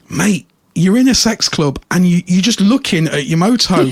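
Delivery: ordinary delivery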